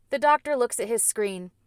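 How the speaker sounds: plain reading voice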